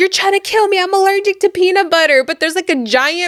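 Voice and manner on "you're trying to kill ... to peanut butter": frantic, high, hysterical, overdramatic outburst. Retelling a girl's reaction to a snack: imitating Cece acting crazy. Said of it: "She starts acting all crazy".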